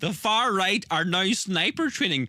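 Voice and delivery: words broken up by laughing. Reading out a video's claim you find funny, laughing while talking. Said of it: "I can't stop laughing at this".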